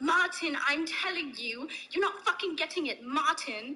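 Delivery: berating British telling-off. Imitating a billionaire yelling at his assistant every morning: imitating a billionaire yelling. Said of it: "that was a great impression".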